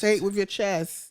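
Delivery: ordinary delivery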